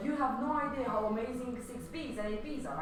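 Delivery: ordinary talk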